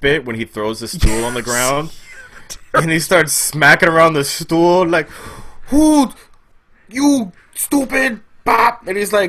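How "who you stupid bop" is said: very high, halting, slow stammering broken English. Describing his terrorist bit, the speaker imitates him in stammering broken English. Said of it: "In stammering, like, broken English".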